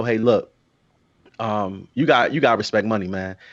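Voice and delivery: ordinary talk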